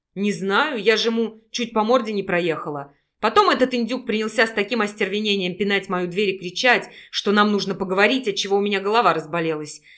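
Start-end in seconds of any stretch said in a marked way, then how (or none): none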